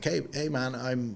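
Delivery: put-on American accent. Retelling a customer's message to them: put-on American accent. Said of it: "Great accent".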